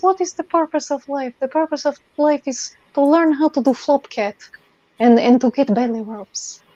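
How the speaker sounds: effeminate, loose, vaguely Russian cat voice. Describing how the cat talks, speaking as the cat: vaguely Russian accent. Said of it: "he sounds kind of Russian, like vaguely Russian, and he talks kind of like this".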